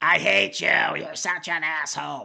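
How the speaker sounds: small, creaky, rough puppet voice. Recapping a wrestling match, speaker quotes Seth Rollins's mid-match promo in little puppet voice. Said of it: "With his little puppet voice".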